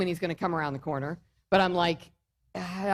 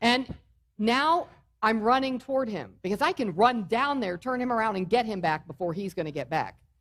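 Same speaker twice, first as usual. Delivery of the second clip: normal talking voice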